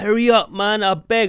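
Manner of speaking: put-on long hollering shout, high and drawn-out. Retelling shouting at an older brother for making them late: imitating own past shouting. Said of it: "I used to be flipping shouting".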